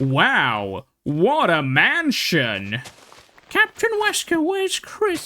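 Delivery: bad American accent, swooping delivery. Mocking the old game's butchered voice acting, doing bad american game voice acting. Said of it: "I can't do the American accent".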